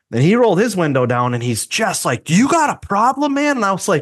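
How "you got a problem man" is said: put-on very high, shrill, taunting scream. Recounting a stoplight encounter, the speaker retells the other driver's scream. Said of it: "he's screaming out his passenger window".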